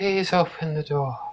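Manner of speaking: faint, very soft, hushed voice. A game master voicing a character heard through a door, very soft Hamlin voice. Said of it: "hear a very soft voice".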